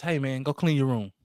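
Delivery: gentle, calm, easy, kindly voice. Acting out a parent telling a kid to clean his room: nice calm voice. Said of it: "in a nice calm voice".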